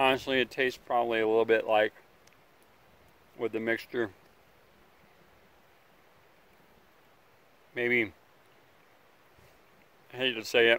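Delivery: speaking while chewing, mouth full. Tasting food and giving a verdict: talking with mouth full. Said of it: "I'm talking with my mouth full".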